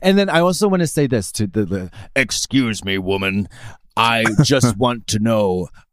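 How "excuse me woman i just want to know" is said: slow, fake, manly, macho straight-man voice. Trying out a fake masculine voice on a woman: put-on macho straight man voice. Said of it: "Let me try that again".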